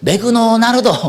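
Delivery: put-on word pronounced the Japanese way, Japanese accent. Imitating how japanese speakers pronounce english, in a japanese accent. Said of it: "일본 사람한테 시키잖아요. 그럼 뭐라고 발음하는지 아세요?".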